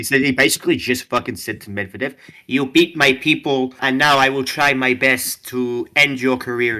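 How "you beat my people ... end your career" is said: slow, drawn-out, clumsy fake Italian accent. Acting out a tennis player addressing Medvedev after the Rome Open, in a bad Italian-accented Sinner impression. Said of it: "I don't know how to fucking do the Italian voice".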